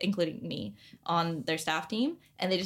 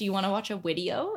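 put-on German-accented English with w pronounced as v. Retelling what a German roommate at boarding school said: imitating German accent. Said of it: "she would be like".

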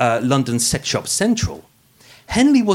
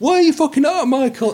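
very high, pitched-way-up screaming yell; 13 semitones higher, 4 dB louder than usual. Describing recording at home, he is retelling screaming at himself. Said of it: "I'm screaming at myself".

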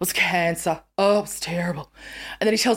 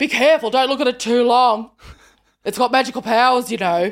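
put-on, raised camp delivery; 4 semitones higher, 5 dB louder than usual. Retelling what a voice behind the speaker said in warning, camp voice. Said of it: "this camp voice says".

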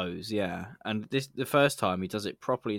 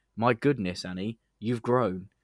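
normal talking voice

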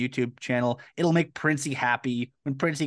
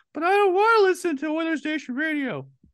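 very high, put-on, mocking falsetto. Speaker imitates listeners complaining about the radio show: falsetto imitating complaining listeners. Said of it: "I just like the falsetto voice".

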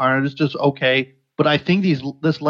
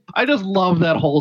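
usual speaking voice

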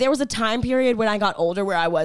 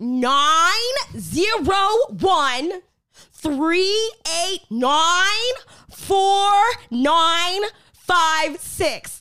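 "nine" stressed hard, higher pitch; 9 semitones higher than usual. Imitating her mother saying a phone number on the phone, stressing the nine. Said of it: "Like she really hits really, the nine".

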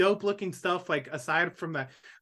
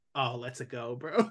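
casual dude-bro voice, lower and quieter; 6 semitones lower, 5 dB quieter than usual. Showing how the Mario catchphrase is said in a movie: Chris Pratt's Mario voice. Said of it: "but I'd say it like".

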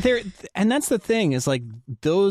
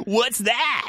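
put-on, pitched-up radio announcer voice; 8 semitones higher than usual. Podcast speaker asks a follow-up question, in a radio announcer voice. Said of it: "I don't like this voice".

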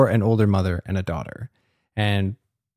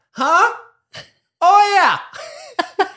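put-on very high, loud, blaring elderly-woman voice. Mocking an old lady talking through a quiet movie, imitating a loud old lady. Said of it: "Full volume throughout the whole film".

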